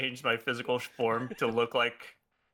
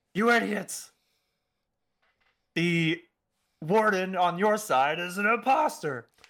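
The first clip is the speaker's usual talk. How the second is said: high, shouted put-on voice; 7 semitones higher, 4 dB louder than usual. During a game, a player to the guards, yelling in the warden's voice. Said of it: "I'm just going to yell in the... warden's voice".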